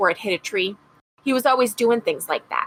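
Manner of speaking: plain reading voice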